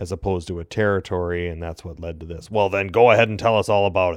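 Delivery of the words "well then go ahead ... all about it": put-on angry voice. Retelling a Facebook reply to his correction: imitating an angry retort. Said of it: "why so angry?".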